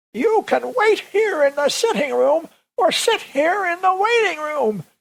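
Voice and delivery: bad put-on old-timer voice, very high. Showing a voice borrowed from a comedian: put-on old person voice. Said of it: "My best old person voice".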